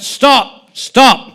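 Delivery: very high, loud yell. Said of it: "grandfather yelled out".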